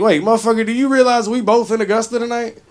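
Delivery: put-on indignant, incredulous tone. Retelling an encounter with another comedian: retelling own indignant reply. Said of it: "I was like".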